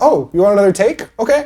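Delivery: high, clueless, oblivious simpleton voice. Pitching a character who just doesn't get it: clueless idiot voice. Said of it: "a guy who's just kind of an idiot".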